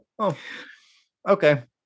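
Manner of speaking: high-pitched, loud, begrudging tone. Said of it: "a very begrudging nod from me to go".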